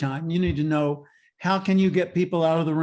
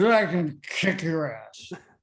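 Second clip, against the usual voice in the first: put-on drunk man voice, much slower. Speaker retelling a man interrupting his speech, imitating a drunk man. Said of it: "he comes stumbling in blind drunk".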